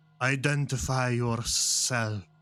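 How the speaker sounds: sibilant hissing creature voice through every word. Game master voicing a figure who sees the players emerge from the shadows, deep hissing voice. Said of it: "a deep hissing voice".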